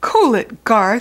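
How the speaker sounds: very loud shouted yell. Jumping out of his chair to stop someone, he is yelling. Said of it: "yelled AJ".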